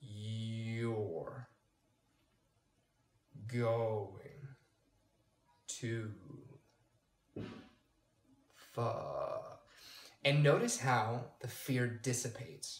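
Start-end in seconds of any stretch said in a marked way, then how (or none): 0.0-9.6 very slow, dragged out, low and soft. Coaching a listener to slow down their self-criticism, say it very slow. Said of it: "Make it really, really slow".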